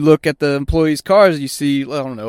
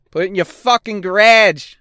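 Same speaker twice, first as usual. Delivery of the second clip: acted Canadian accent, higher pitch; 6 semitones higher, 3 dB louder than usual. Repeating the previous sentence, Canadian accent. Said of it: "That's a fucking Canadian accent".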